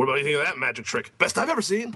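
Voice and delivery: very fast, rushed through with no pauses. Speaker quotes a trailer line, imitating Oliver Platt's fast delivery. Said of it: "he says it really fast".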